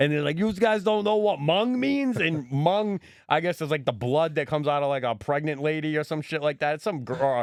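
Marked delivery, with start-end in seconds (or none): 0.4-2.2 put-on high-pitched child voice with a New York accent. Retelling what kids from New York say in an episode, New York kid accent. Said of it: "these kids from New York, they talk like this".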